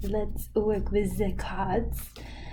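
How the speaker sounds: French-accented speech.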